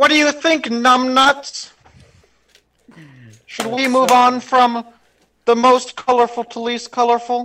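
comic movie-villain voice, pitched high. Showing friends an impression after they bring up this talent: Doctor Evil impression. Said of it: "impersonation of Doctor Evil".

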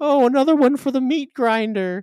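very high, loud, shrill little voice. Speaker describing a Luma from a Mario trailer to listeners: high-pitched Luma voice. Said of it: "it's got this really high-pitched voice".

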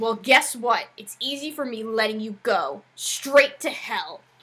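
mock sharp, angry, cutting snap, fired back fast. Retelling a scene where Liberty answers Emma, mock-snapping as Liberty. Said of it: "Liberty just snaps".

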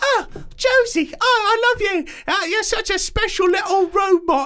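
very high-pitched put-on British accent. Retelling what a woman in the junkyard says to the robot Josie, in a British accent. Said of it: "I like how you're using a British accent".

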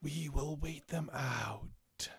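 dark, deathly voice like death itself. A narrator voices figures standing in a cave, speaking in a deathly voice. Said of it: "you can hear kind of in deathly voice saying".

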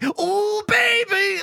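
mock very high pitch, giddy lustful delight. Describing a man at a rich party, imitating his lustful glee. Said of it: "getting like genuinely randy for all the wealth".

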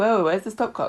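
normal talking voice

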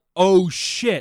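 sudden, loud, high, alarmed startled yell. Retelling swerving from a merging car while on the phone, retelling a yell. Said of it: "I yelled".

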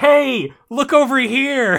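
put-on very high, drawn-out, tiny baby's shout. Retelling a story moment where a tiny baby calls out: imitating someone shouting. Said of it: "tiny baby shouting".

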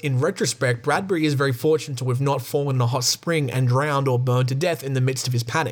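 normal talking voice

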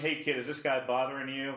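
plain

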